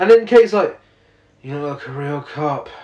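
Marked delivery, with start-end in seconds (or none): 1.4-2.7 mock bored, sleepy voice, quieter. Retelling a line from a film scene: imitating a bored, exhausted voice. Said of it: "she sounds bored and exhausted".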